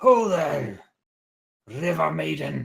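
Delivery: very loud, hoarse, rough, high shout. Narrating a scene, voicing a ship's captain shouting out. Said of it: "And he shouts out".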